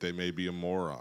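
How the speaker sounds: ordinary delivery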